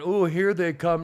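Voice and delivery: real flirty, flirtatious tone. Retelling a tv commercial, voicing the woman: imitating a flirty woman. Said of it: "all of a sudden she's real flirty".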